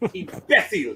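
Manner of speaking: put-on Castilian Spanish accent. Joking about the word imbecile: put-on Castilian Spanish accent. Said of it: "That's what the Castilian accent".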